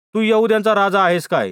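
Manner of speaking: ordinary delivery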